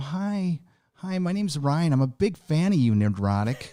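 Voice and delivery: put-on timid, nervous, sheepish, shy tone. Retelling how a nervous fan first approached at a meetup: imitating Ryan being sheepish. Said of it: "You're all sheepish".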